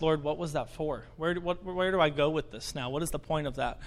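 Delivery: normal talking voice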